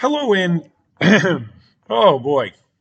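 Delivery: slightly cracked voice. Opening a YouTube update, the speaker notices a little cracky voice. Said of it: "the voice is a little cracky".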